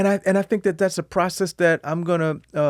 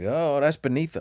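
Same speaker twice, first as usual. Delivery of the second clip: ordinary delivery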